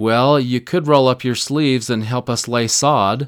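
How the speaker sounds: mildly mock-sarcastic tone. Retelling what a wife said to the departing bishop, retelling a slightly sarcastic remark. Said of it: "the wife said a little sarcastically".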